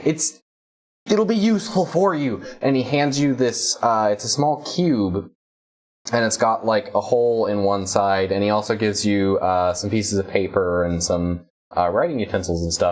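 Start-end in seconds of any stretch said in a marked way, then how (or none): 0.0-2.4 high, super excited, eager chatter. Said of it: "He's super excited".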